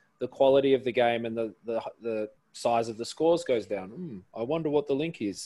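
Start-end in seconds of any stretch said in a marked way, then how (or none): none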